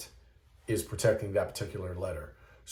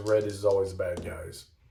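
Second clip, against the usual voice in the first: ordinary delivery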